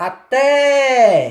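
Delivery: té of até stretched, loud and strongly stressed. Demonstrating where the stress falls, loud, drawn-out té in até. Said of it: "a pronúncia mais forte, mais demorada é na vogal E".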